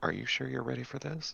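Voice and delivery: whispered. A character, certain no one can overhear, turns to her companion: whisper. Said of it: "Christine will whisper to you".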